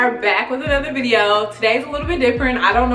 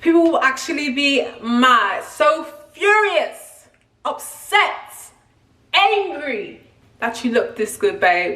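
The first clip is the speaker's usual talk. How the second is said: put-on English accent, tried out and practised; 3 semitones higher than usual. A former Real Housewife tries out an accent: practice English accent. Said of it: "I'm working on my English accent".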